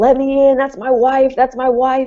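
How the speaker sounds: acted high scream, insistent, repeated over and over. Retelling a resident banging on a door, imitating a man screaming. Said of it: "he's screaming".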